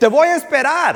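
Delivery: slow, loud, high shouting.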